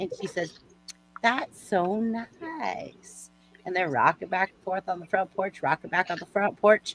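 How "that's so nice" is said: put-on slow, drawn-out Southern accent. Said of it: "I like your Southern accent".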